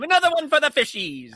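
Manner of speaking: shrill, high, loud, taunting scream. Retelling what a tennis instructor always screamed: imitating a screaming instructor. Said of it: "he'd always scream".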